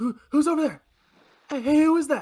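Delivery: worried woman's voice. Game narrator voicing a woman calling out toward the tree line, in a worried woman's voice. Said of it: "a worried woman's voice".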